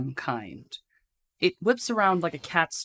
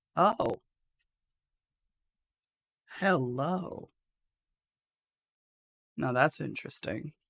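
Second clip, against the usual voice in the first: much deeper, lowered voice, quieter; 4 dB quieter than usual. Voicing a character who notices someone at a club: much deeper voice. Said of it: "her voice becomes a lot deeper".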